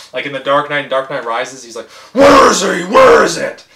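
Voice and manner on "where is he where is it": booming, slow, high interrogating voice. Imitating Batman's lines from The Dark Knight films in the Bale Batman voice. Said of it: "You just start talking in the Bale voice".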